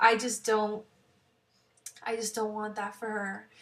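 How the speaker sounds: voice on the edge of tears. Parent speaking about not wanting their child hurt: teary voice. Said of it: "I'm getting teary just thinking about it".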